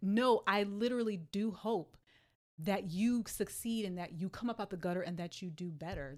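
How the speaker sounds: normal talking voice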